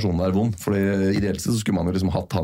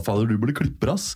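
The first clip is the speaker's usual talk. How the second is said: usual speaking voice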